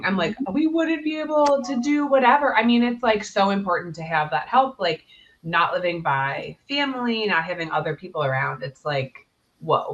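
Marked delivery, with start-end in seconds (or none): 0.5-2.6 mock very high-pitched blubbering, close to tears. Retelling own reaction to an Olympian thanking her nanny: imitating own blubbering. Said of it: "I was, like, blubbering".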